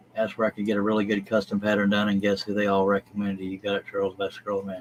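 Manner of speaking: ordinary talk, nothing marked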